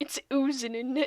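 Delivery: botched, failed British accent attempt. Reading out a chat comment, trying a British accent. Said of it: "I can't do a British accent".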